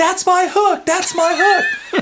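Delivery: very high, long-stretched, drawn-out screaming. Retelling a fishing trip as a fish lands in the boat, imitating Josh screaming. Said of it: "Josh starts screaming".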